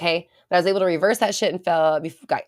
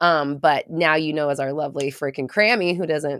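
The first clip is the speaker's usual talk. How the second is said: normal talking voice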